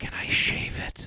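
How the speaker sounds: slow, breathy, barely audible whisper. Reading a story aloud where a date whispers a question: imitating a whisper.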